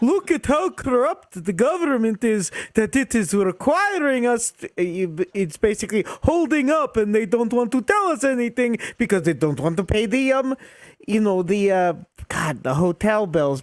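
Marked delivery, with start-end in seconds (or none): 0.0-4.7 put-on Polish accent, higher pitch. Retelling what a guy trolling at the airport said: imitating a Polish accent. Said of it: "What a great Polish accent".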